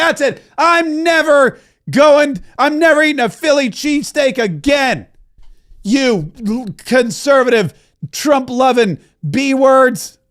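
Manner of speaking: furious angry rant, high and slow. Retelling throwing something at the TV: imitating an angry outburst. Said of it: "throw something at the T V and I'd be like".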